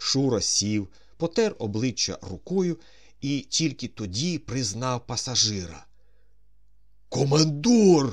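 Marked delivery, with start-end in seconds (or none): 7.1-8.1 very loud, high shouted cry. The flight mechanic, just woken, recognizes the passenger, shouting. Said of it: "викрикнув він".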